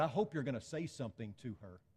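angry seething voice. Retelling what a lady in the church said: imitating someone seething mad. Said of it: "she came to me seething mad and said".

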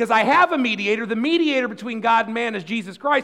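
full-volume, very loud, high-pitched pulpit-style yelling. Addressing a group of listeners, yelling. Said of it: "I'm yelling at you again and I'm sorry".

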